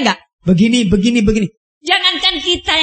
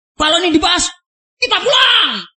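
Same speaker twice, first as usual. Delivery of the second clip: high, angry mock yell. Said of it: "berteriak keras, mengancam pulang".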